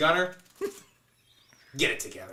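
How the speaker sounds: loud, stern dad voice.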